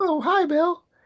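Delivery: voice pushed super high in pitch. Recounting a scene, imitating a news anchor greeting someone in a super high voice. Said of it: "his voice is like super high".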